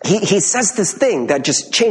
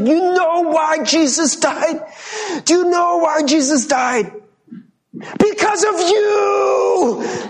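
very high preacher yell, "you" stretched long; 12 semitones higher than usual. Recalling a preacher addressing them at twelve, retelling a preacher's yell. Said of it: "was like kind of like yelling at us".

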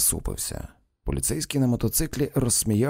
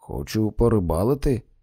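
plain

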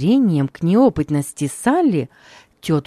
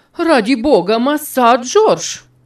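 loud exclamation of horror; 9 semitones higher, 5 dB louder than usual. A cook grabs the master's hand as he raises a big knife over the cake, exclaiming in horror. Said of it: "воскликнула с ужасом тетушка Хлоя".

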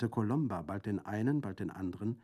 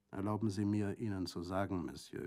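ordinary delivery, nothing marked

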